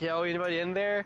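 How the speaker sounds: ordinary talk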